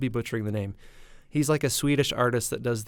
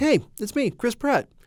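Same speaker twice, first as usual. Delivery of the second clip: put-on friendly ad narrator voice, higher and louder; 11 semitones higher, 5 dB louder than usual. Retelling a prayer app ad: Chris Pratt impression. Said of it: "Chris Pratt YouTube ads where he's like".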